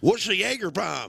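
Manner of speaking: put-on old, high, twangy southern voice. Retelling an old man at the end of the bar asking a question, southern twangy voice. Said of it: "that southern twangy voice".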